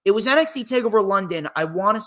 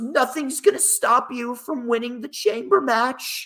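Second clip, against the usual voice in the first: fake tearful, weepy sobbing voice; 4 semitones higher than usual. Recapping a wrestling segment, imitating Nia's fake crying. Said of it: "Nia came out fake crying".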